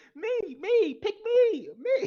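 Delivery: yelped high, loud and bouncy. A player volunteers to go first in the game, Donkey from Shrek voice. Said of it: "I'm gonna do the fucking donkey from Shrek".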